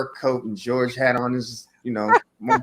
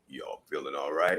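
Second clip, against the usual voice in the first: very low, deep voice, dropped right down; 10 semitones lower, 10 dB quieter than usual. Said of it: "his voice is really deep".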